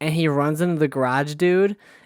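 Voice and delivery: ordinary talk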